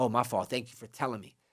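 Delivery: meek, low, soft apologetic voice.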